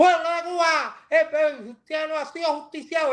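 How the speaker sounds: high, proclaiming radio announcer voice. Recalling a famous Radio Reloj broadcast, the speaker does a José Antonio Echevarría impression. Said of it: "Esa voz así".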